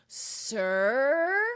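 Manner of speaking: lazy, drawn-out, laid-back surfer-dude drawl. Describing how a book character answers his teacher, surfer dude voice. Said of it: "like a surfer".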